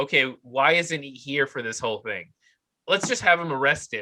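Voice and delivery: plain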